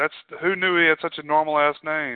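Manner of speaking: ordinary delivery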